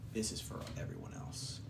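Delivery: very quiet, low, calm, near-whispered. The narrator voices Dagan before he takes a man, low and calm. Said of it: "In a low, calm voice".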